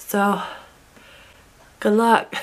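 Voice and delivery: hoarse, strained, sick-sounding voice. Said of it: "this is what I sound like".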